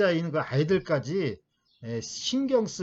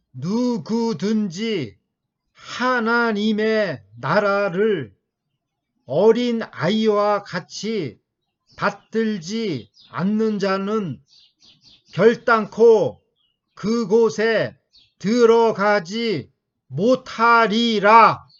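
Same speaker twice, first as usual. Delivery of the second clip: very loud, very slow, separated staccato words; 5 semitones higher, 8 dB louder than usual. Rereading a Bible verse to show the style: staccato, each word clipped. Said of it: "이렇게 스타카토로".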